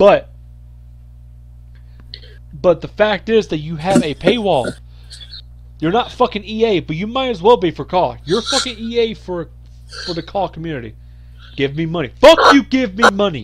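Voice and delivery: increasingly heated. Answering a question and holding nothing back, getting heated. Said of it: "you were getting literally heated".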